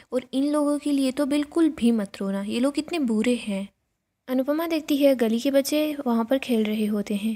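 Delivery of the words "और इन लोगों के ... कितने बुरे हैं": usual speaking voice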